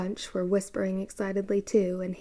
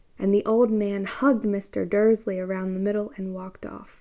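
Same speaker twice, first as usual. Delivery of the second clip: plain reading voice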